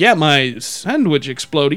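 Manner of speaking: low, slow, sarcastic, insincere drawl. Recalling how he'd answer whenever the sandwich came up, retelling a sarcastic remark. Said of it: "sarcastic tone".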